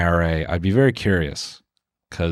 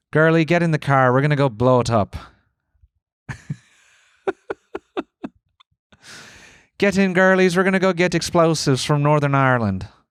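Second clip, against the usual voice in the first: game attempt at Irish accent, pitched up; 7 semitones higher than usual. Speaker describes a TV show by acting out its characters: Irish accent. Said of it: "I can do an Irish accent".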